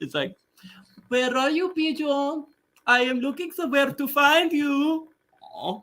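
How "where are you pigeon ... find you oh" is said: put-on high-pitched French accent. Talking about favorite cartoon characters, the speaker quotes Pepe Le Pew's French accent. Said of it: "I can't get over the French accent".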